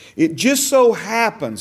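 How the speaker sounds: ironic, sarcastic, tongue-in-cheek, plainly insincere. Speaker openly flags their own remark while explaining a fact: said sarcastically. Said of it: "and I'm saying that sarcastically".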